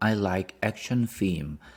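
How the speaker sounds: usual speaking voice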